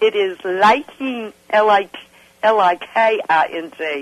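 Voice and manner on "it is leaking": put-on Indian accent, higher pitch. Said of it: "I'm gonna read it as I'm imagining the Indian saying this".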